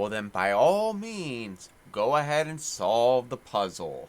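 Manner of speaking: as sarcastic as it gets, heavy and annoyed. Voicing an annoyed character answering a companion: as sarcastic as possible. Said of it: "as sarcastically as possible".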